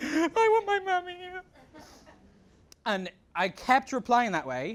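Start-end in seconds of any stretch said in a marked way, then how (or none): 0.0-1.2 very high, put-on, fake blubbering and crying. Retelling replying to a man who demanded the crying stop, fake crying.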